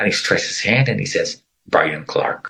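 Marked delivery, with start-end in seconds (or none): 1.7-2.5 put-on robot-like speech, lower pitch. Retelling how a man stretched out his hand and introduced himself: imitating a robotic voice. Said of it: "like a robot".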